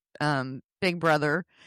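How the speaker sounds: ordinary talk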